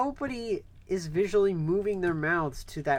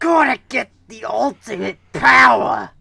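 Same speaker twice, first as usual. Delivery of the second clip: very loud, rough and creaky bellow; 5 semitones higher, 15 dB louder than usual. Shouting a villain line while coughing: General Grievous voice. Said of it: "You sounded like General Grievous".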